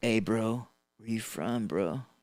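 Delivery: surfer-dude voice, beach surfer talk. Imagining gang members who talk like surfers: Keanu Reeves surfer voice. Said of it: "That was mean old Keanu Reeves".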